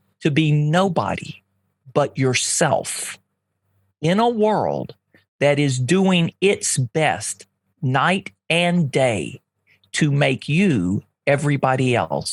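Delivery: slow and unhurried. Asked by the host to repeat an E. E. Cummings quote a little slower, saying it slowly. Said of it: "Can you say that again and just a little slower?".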